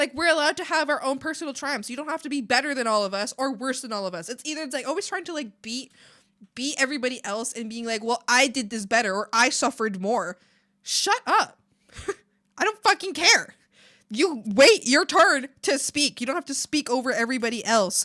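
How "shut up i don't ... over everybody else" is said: angry outburst, slower. Speaker complaining about people always trying to outdo everyone, angry. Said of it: "sorry, I got angry again".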